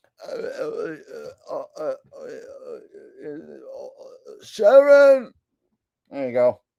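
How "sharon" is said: very slow, creaky, stuttering voice. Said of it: "It's a good enough [name] impression".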